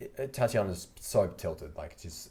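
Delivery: ordinary talk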